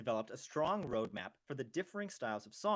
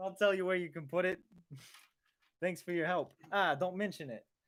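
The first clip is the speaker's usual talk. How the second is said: harsh, put-on New Jersey accent; 4 semitones higher, 4 dB louder than usual. Showing how the two of them always talk together: harsh new jersey accent. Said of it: "We only talk like this".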